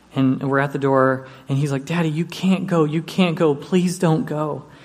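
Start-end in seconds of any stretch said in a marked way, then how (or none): 1.8-4.6 put-on little boy's tearful, sobbing, begging voice. Retelling how a crying child begged at the door: imitating a crying child pleading. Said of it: "he started crying".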